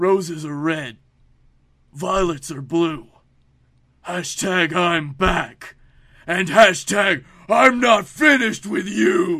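very loud, booming put-on voice of huge scary giant. Reading a wrestler's poem aloud: Braun Strowman voice. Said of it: "let me read you his poem in this Braun Strowman voice".

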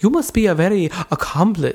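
put-on vampire voice. Retelling a film scene, voicing a shopkeeper as Dracula voice. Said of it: "I'm making her into Dracula".

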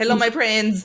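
put-on Hindi accent. Imitating a content creator's greeting with a Hindi accent. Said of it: "with a Hindi accent".

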